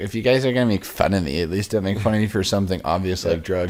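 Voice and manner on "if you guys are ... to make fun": usual speaking voice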